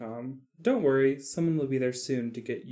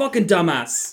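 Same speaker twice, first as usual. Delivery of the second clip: very loud, shrill chef yell at full blast; 5 semitones higher, 10 dB louder than usual. Imagining Gordon Ramsay cooking your thigh: Gordon Ramsay yelling impression. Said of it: "Gordon Ramsay's, like, yelling at you".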